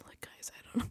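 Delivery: soft, secretive whisper, as if hiding. Retelling how contestants on The Challenge talk: imitating whispering. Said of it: "whispering like this".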